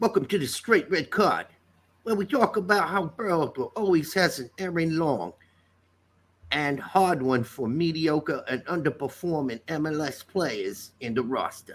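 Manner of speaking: put-on New York accent. Doing the show intro the way Kevin would, in Kevin's voice with a New York accent. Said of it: "you gave him kind of a New York and".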